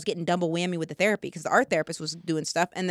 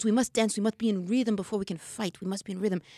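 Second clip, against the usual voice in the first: imitated Italian accent. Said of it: "this accent impersonation".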